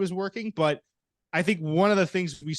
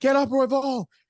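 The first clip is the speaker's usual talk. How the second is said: high-pitched, loud screaming; 8 semitones higher, 4 dB louder than usual. Recalling a fight with money bet on it: retelling screaming at the TV. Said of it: "I was screaming at the TV".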